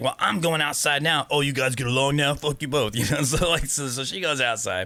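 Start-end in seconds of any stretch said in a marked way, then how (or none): 0.0-2.9 put-on fed-up, angry girl's outburst. Speaker retells a girl's outburst after being told to stay inside: imitating an angry girl. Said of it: "she got mad about it".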